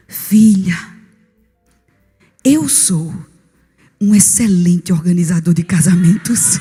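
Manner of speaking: tender, gentle, unhurried voice, low and slow. Recalling a voice heard while kneeling and praying, speaking in a soft voice. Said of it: "aquela voz suave dizendo assim para mim".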